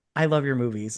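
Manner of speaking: ordinary talk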